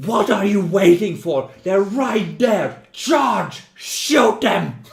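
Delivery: very loud, high, barked yelling. Running a game, the narrator voices Gretel yelling at her colleagues. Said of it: "she's just yelling at the colleagues".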